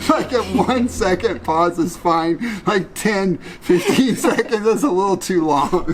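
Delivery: high, slow, complaining tone while laughing throughout.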